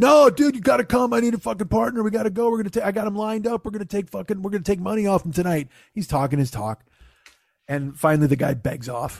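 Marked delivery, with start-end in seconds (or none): 0.0-5.7 mock booming, loud, pitched-up shouting. Retelling a passenger's loud phone call while driving: imitating him yelling. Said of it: "he's, like, yelling".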